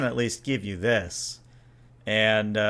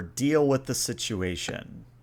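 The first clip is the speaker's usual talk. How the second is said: plain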